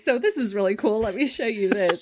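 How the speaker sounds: teasing, mocking tech keynote presenter voice. Summing up a tech announcement, imitating Mark Zuckerberg mockingly. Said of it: "He's like".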